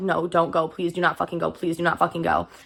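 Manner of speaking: tearful, crying voice. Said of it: "I'm just sitting there crying".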